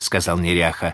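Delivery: ordinary delivery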